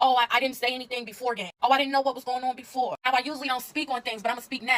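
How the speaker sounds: normal talking voice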